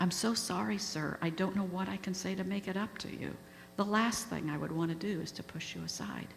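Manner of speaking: plain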